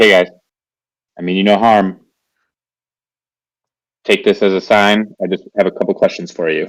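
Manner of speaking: stage whisper, half-whispered. Crouching low and speaking gently to rats: half-whispering to rats. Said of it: "just kinda whisper over to the rats".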